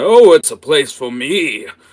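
put-on old man voice, high, very loud. Voicing an old man answering the player: old man character voice. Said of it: "And the old man".

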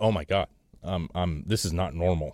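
put-on frightened outburst, stammering over ums. Retelling how a friend reacted on thinking something was wrong: imitating someone panicking. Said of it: "was scared".

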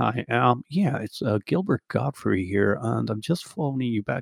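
soft, plain, unassuming, mild, ordinary voice. Retelling a voicemail to a publisher, imitating Gilbert Gottfried's normal voice. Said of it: "he actually has a normal voice".

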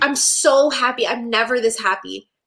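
mock bubbly, overjoyed, gushing delight. Retelling a show scene where the character is excited about everything: imitating an excited character. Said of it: "so excited".

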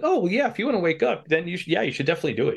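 mock supportive, high, encouraging tone. Quoting a character's simple advice, imitating an encouraging tone. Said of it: "he's being encouraging".

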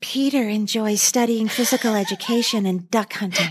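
low, breathy voice. Recalling Judy Landers reading the couples' descriptions before they dance, Judy Landers breathy voice. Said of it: "in that breathy voice".

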